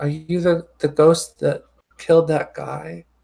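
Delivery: wee, small, tiny little voice. In an improvised ghost scene, a small voice questions the ghost; small voice. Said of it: "you just hear a small voice just say".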